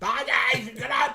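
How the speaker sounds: calling out loudly. Saying goodbye to Dave as he leaves: shouting goodbye. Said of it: "I'm shouting like he's off to bed".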